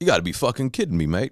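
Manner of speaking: put-on thick Cockney accent. Retelling what a man said when told about a Las Vegas punk corner, Cockney accent. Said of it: "in his very Cockney accent".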